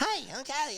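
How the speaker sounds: mock, really high-pitched, nervous, stressed voice. Imitating the other speaker on a stressful phone call: really high voice. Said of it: "going all over this really high voice".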